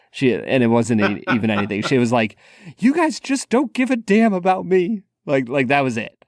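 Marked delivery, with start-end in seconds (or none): 2.8-5.0 mock shrill, very high yelling outburst. Recalling their mom scolding them and their brother, imitating mom yelling. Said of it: "my mom was like yelling at us".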